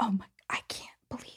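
fast, mortified, embarrassed whisper.

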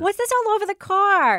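put-on New York Long Island accent. Acting out the scene, the speaker gives Rebecca's line in a Long Island accent. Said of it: "Do the accent. You're from Long Island".

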